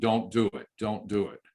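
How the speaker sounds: plain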